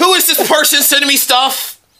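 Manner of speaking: mock, very high, agitated, upset outburst. Retelling reading an email from an unknown sender, acting upset. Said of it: "you sound very upset".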